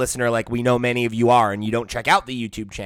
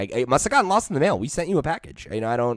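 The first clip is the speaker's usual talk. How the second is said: ordinary delivery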